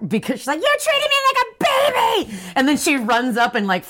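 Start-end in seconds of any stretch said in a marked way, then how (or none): 0.6-2.4 put-on very high-pitched, shrill yell. Retelling a plot where a girl yells at her grandmother: imitating a character yelling. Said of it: "yells at her grandmother".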